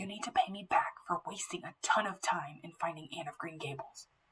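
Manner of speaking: soft, hushed whisper. Narrator reading a story, a man cupping his mouth and leaning in: whispering. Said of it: "he whispered".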